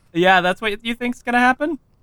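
high, scoffing, mocking laugh. Answering a rival fighter's threat in character: laughing in his face. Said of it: "I laugh in his face".

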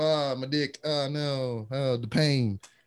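pained groaning. Retelling how the guys reacted to the video: imitating guys groaning in pain. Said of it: "grabbing themselves".

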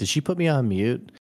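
put-on teasing, lighthearted, playful joking tone. Retelling what someone jokingly asked about being muted, imitating a joking remark. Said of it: "like jokingly said".

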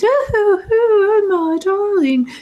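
very high-pitched good witch voice. Retelling how she spoke, in the Glinda the Good Witch voice. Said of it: "doing the total Glinda good witch voice".

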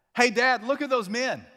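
put-on piercing little-kid yell, very high and loud. Father retelling what his son said at the register, imitating Jackson shouting. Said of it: "at the top of his voice".

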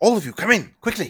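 very high, piping, put-on half-elf character voice. Voicing a half-elf ushering the party inside: voicing a half-elf NPC. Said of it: "he kinda pulls Randall in".

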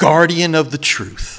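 put-on slow, scornful, contemptuous, disdainful tone. Retelling what a woman at his college said to him, mimicking her disdain. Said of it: "she meant it like with disdain".

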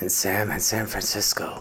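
mildly sinister, menacing, villain-like voice. A host introduces another co-host at the show's opening, a little sinister. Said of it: "A little sinister".

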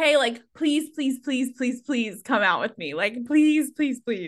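put-on, repeated, groveling begging. Retelling how a man asked her out: imitating a man begging. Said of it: "a man begging me to go out with him".

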